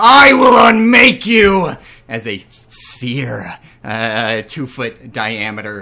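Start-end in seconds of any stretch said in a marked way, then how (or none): 0.0-1.7 very high, very loud skeletal villain bellow. A narrator voices a skeletal figure pointing a finger at the players, bellowing villain voice. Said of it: "his voice bellowing".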